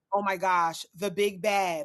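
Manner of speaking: plain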